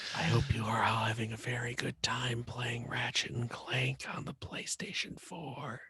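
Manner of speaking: mock very quiet, soft ASMR whisper. Hosts doing a joking ASMR bit into the microphone: mock ASMR whisper. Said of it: "We're doing an ASMR".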